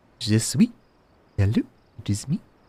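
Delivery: fake French accent. Trying out a newly learned voice between quests, in a bad french accent. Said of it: "French accent as a as a voice that I can do".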